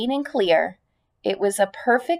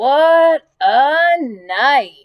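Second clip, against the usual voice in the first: husky, hoarse, raised voice; 4 semitones higher, 6 dB louder than usual. Narrator voices the rat repeating his words after his return, hoarse. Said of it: "he repeated hoarsely".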